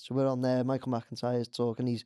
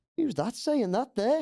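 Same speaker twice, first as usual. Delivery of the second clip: put-on very heavy, thick Scottish accent, high pitched; 11 semitones higher, 3 dB louder than usual. Act out a man popping his head on behind the screen, in a really heavy Scottish accent. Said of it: "in his really heavy Scottish accent".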